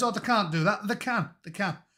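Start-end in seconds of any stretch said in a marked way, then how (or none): none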